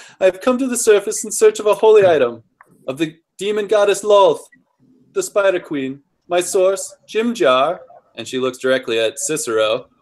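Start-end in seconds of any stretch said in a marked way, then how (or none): 0.2-7.8 higher put-on condescending lady voice. Speaker voices a character addressing the group, in a lady voice. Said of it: "This is my lady voice".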